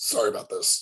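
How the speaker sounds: gruff, rough character voice. Showing how the gruff character apologizes as she moves them, in a gruff voice. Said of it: "she's gruff, so it's more like".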